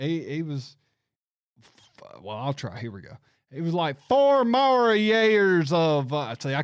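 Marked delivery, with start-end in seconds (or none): 4.1-6.1 put-on deep Mississippi Southern accent, higher and louder. Mimicking a politician's speech that sounded like Mississippi: imitating Henry McMaster's accent. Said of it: "I'm not even gonna try to mimic the way he talked".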